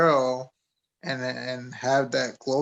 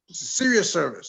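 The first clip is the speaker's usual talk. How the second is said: put-on angry priest voice, higher; 4 semitones higher than usual. Retelling a priest scolding giggling churchgoers: imitating an angry priest. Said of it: "he got, like, real, like, pissed. It's like".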